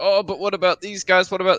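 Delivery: emotional, worked-up speech. Mocking a debate opponent's complaints: imitating someone getting upset. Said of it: "This dude's getting upset".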